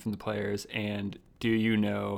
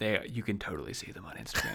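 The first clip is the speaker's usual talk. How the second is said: hushed, quiet whisper; 3 dB quieter than usual. Acting out what the listener will say next; whispering. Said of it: "you're going to whisper silently".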